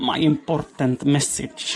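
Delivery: clumsy, butchered, put-on Finnish accent. Reading a chat phrase as a friend would: put-on finnish accent. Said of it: "trying my Finnish".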